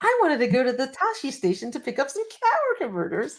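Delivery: high, whiny, complaining sing-song voice with swoops. Chatting with a friend, the speaker slips into a quoted line in a put-on whiny voice. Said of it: "kind of into the whiny voice".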